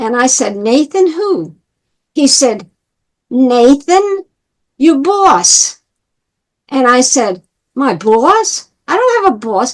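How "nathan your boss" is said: put-on thick, heavy New York accent, laid on. Retelling what a man said in a conversation, imitating his accent. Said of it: "in his accent".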